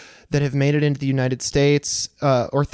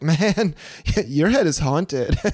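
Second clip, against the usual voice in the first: stoned, laid-back surfer dude voice. Explaining how a line sounds, speaker imitates a surfer dude talking to his bro: surfer dude voice. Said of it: "sounds like a surfer dude saying something to his bro".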